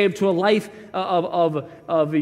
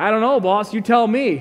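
put-on sarcastic tone, higher pitch; 4 semitones higher than usual. Imagining answering the king back when asked about three thrown in: mock sarcastic reply. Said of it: "I'm tempted to be sarcastic".

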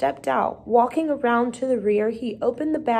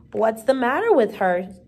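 usual speaking voice

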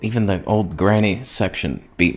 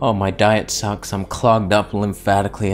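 usual speaking voice

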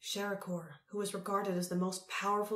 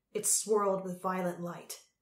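ordinary delivery

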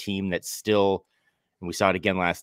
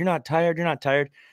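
put-on very high-pitched, juvenile yell; 10 semitones higher than usual. Retelling a player's sideline remark to a teammate: imitating someone yelling. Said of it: "yelling at Slow-mo".

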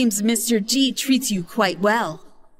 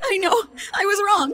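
very high, tearful sobbing through tears; 11 semitones higher than usual. Granddaughter answering her scolding grandpa, crying. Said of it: "Stop crying".

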